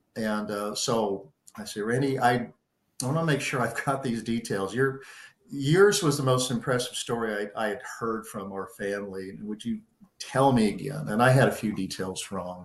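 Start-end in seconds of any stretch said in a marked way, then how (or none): none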